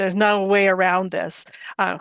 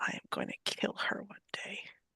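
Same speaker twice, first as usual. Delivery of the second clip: hushed whisper, barely audible; 15 dB quieter than usual. A game master's character whispers to one player so only they hear, whispering. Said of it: "she whispers to you, so only you can hear this".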